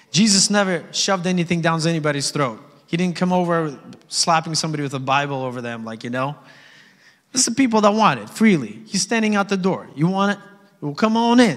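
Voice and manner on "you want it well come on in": put-on Jersey-accented voice. Speaker acts out someone standing at the door, in a jersey accent. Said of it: "Sounds like a Jersey accent right there".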